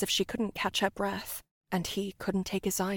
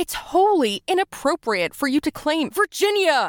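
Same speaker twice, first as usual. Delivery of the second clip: sudden, high, very loud shouted outburst; 8 semitones higher, 10 dB louder than usual. Narrator reading Samir's line to her, shouted. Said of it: "Samir shouted".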